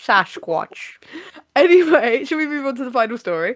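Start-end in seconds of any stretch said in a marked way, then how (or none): 0.0-1.0 put-on Scottish voice, lower. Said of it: "I turned into Sean Connery there".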